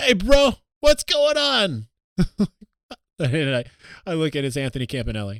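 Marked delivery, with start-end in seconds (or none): 0.0-1.9 put-on very high, loud, heavy Jersey accent. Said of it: "this very Jersey voice being like".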